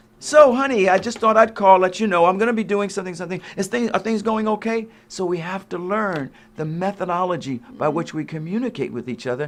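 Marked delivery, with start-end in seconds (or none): 0.2-4.9 put-on voice, higher and faster. Speaker acts out how she will phone if he hasn't called; imitating her phone call. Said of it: "And it'll be more like".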